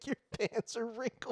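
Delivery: put-on irritated, high-pitched, nagging yelling. Imitating an old man scolding Craig about pants: imitating someone yelling. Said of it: "He's yelling at Craig about his pants".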